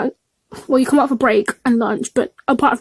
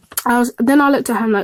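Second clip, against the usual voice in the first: plain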